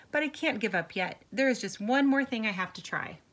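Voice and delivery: ordinary talk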